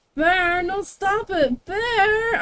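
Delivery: put-on very high, drawn-out, whiny spoilt-child voice. Recalling a woman in a video telling Bear to stop: imitating high-pitched whiny voice. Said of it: "really like high-pitched, whiny".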